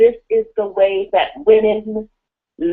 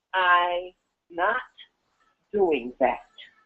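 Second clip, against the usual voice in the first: very soft, low, hushed, firm, no-nonsense tone; 4 semitones lower, 9 dB quieter than usual. Speaker demonstrating how women respond to men, stern. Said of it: "We hear stern".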